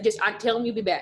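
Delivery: put-on thick North Mississippi accent. Retelling what he said when pulling her out of a meeting, imitating thick North Mississippi accent. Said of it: "he's from North Mississippi and has a super thick accent".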